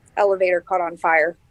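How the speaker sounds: ordinary talk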